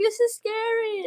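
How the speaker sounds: put-on scared, near-tears little girl, very high. Retelling how a little girl reacted to a movie scene: imitating a crying little girl. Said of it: "She started crying because of the crab scene".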